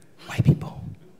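hushed whisper. Speaker acting out folks whispering a word: whispered.

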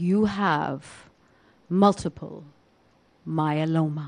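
very slow, low and hushed, each word deliberate. Retelling a man announcing a diagnosis to the speaker, speaking very, very slowly. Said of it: "he spoke very, very slowly".

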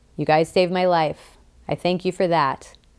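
ordinary delivery

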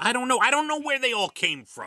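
very loud, high-pitched, shrill shouting. Asked where some phrases came from, answering: yelling. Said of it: "Are you yelling at me?".

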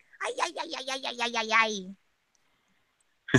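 high character voice from a film. Asked by everyone to do the voice used for the film, in that character voice. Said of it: "Sounds a bit like it".

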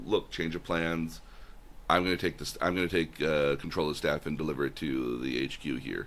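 ordinary talk

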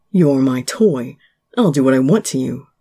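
deep, crackling voice. Reading a story aloud, Kei finally speaks to the narrator, in a deep, crackling voice. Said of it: "In a deep, crackling voice".

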